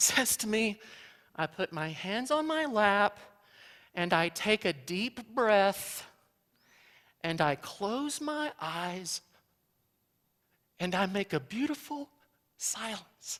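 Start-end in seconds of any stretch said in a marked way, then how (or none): 1.3-13.4 put-on tiny, small little child voice. Retelling what a child said to the speaker this week: imitating Aiden's little voice. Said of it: "in his little voice".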